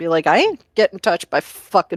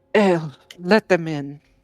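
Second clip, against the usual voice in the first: gentle, soft voice. Voicing the person inside a room who answers the visitors: Herva's gentle voice. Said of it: "a gentle, Braddock voice from inside".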